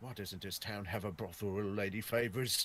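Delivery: slow muttering under breath. Playing a character who grumbles about the town, mumbling under breath. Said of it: "I just slowly mumble under my breath".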